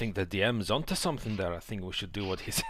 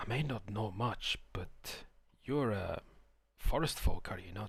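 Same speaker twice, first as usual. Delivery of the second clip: half-whispered as quietly as possible; 5 dB quieter than usual. Half-whispering to another character in a tabletop game: half-whispering in character. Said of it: "I whisper, as quietly as I can".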